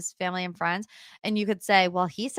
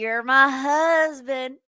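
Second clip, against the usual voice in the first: put-on country accent, higher pitch; 4 semitones higher, 4 dB louder than usual. Retelling what a newlywed said while celebrating: country accent imitating Colleen. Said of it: "Colleen got this country accent".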